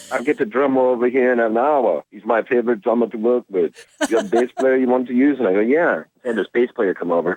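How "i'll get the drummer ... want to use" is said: put-on Swedish accent, pitched up. Retelling what the producer with a studio told him, put-on Swedish accent. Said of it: "he's got this Swedish accent".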